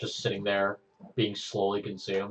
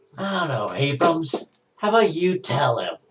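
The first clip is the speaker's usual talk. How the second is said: spiteful, dripping with spite, raised voice; 8 semitones higher, 8 dB louder than usual. Asked what spread through her, a character turns to another man, spiteful.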